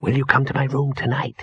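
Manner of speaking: spoken with a hiss. Ginger speaks to Victor as Detritus the troll looms over them; hissed. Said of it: "hissed Ginger".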